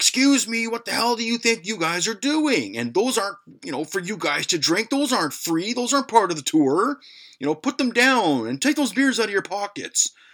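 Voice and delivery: put-on shrill scolding yell, very high-pitched. Retelling how the tour guide yelled at them over the stolen beers: imitating the tour guide yelling. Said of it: "and he yells".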